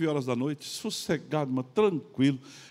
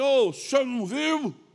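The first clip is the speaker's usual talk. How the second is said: very slow, high, drawn-out reproachful scolding; 9 semitones higher, 3 dB louder than usual. Retelling how a man scolded the speaker over a car mishap, imitating a man scolding. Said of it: "deu uma bronca e me falou assim".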